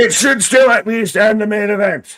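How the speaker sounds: full-on shouting, very high and very loud. Arguing with the other speaker about the main event, yelling. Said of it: "Why are you yelling?".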